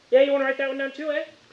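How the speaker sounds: very high, put-on street tough voice.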